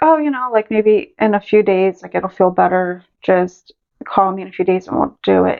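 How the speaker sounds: usual speaking voice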